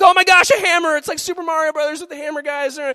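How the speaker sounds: put-on very high, loud, thrilled, freaked-out excitement. Retelling own reaction to getting a hammer: retelling freaked-out excitement. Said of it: "I was just freaked out".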